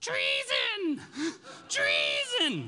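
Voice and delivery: very high-pitched witch voice with swooping pitch. Telling the story of the new king, the speaker voices Athaliah's wicked witch voice. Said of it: "You got to have the wicked witch voice".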